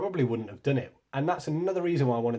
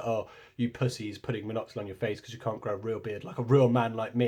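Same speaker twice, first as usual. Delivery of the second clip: usual speaking voice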